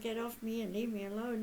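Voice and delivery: ordinary talk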